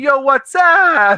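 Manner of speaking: put-on casual Bronx accent. Speaker imitating a woman greeting her friends, Bronx accent. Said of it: "she had a Bronx accent".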